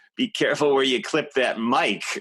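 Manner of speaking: very camp, heavily exaggerated delivery.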